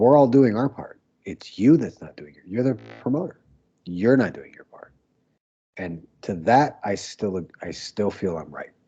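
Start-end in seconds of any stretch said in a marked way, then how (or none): 0.0-4.9 heated, angry screaming rant. Retelling a locker room argument with the promoter: retelling screaming at someone. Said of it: "all the guys could hear me screaming at him".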